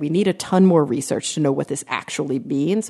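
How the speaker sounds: ordinary talk, nothing marked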